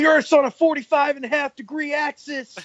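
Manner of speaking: very high promo announcer voice, R's hit hard. Quoting a more outlandish promo: Scott Steiner impression with hard R's. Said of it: "really hard R's".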